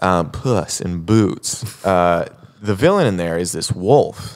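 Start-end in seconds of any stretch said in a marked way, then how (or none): 0.0-1.6 very slow, drawn-out delivery. Naming a children's movie with a scary villain, saying the title very slowly. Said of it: "I like to say it slow".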